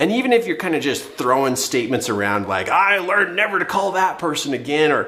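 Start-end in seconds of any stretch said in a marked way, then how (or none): 2.7-4.9 high, heated sarcastic tone. Showing sarcastic statements thrown around after a disappointment: heated sarcasm, put on. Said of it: "sarcastic kind of heat".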